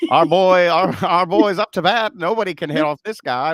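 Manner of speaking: put-on loud, high, old-school sports announcer voice. Recounting a comedy bit about baseball broadcasts, in an old sports announcer voice. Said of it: "When the guys talk like this".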